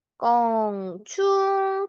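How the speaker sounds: 껑충 said slowly and drawn out.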